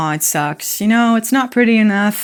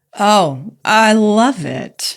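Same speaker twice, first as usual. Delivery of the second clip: dry, ironic sarcasm; 2 semitones higher than usual. Answering how it is in Southern California, sarcastic. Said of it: "Was that sarcastic?".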